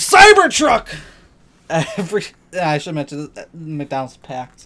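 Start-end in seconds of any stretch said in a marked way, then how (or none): 0.0-0.9 very loud, very high, shrill yell. Retelling standing up in a packed restaurant at a passing truck: imitating own yell. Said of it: "I yelled".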